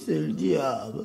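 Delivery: strange, weird, pained, suffering voice. Retelling a voice heard inside, imitating a weird voice. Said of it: "une voix bizarre qui a dit".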